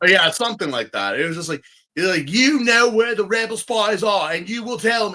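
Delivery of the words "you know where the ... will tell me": put-on Australian and British blended accent. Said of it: "he's talking with like an Australian British accent".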